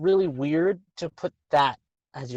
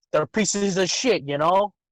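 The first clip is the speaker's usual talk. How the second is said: half-working put-on Italian mafia accent. Acting out a surviving Boromir in a joke scene, attempted Italian mafia accent. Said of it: "I was trying to go for Italian Mafia".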